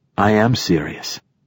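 ordinary talk

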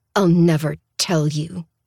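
forced out, teeth clenched. Narrator refusing to give up her brother under questioning, through gritted teeth. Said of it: "I say through gritted teeth".

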